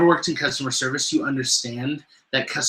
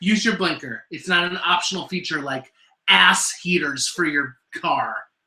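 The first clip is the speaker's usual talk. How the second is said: worked-up, angry, mad ranting; 3 semitones higher than usual. Speaker listing pet peeves to a listener: mad ranting. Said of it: "He's just mad".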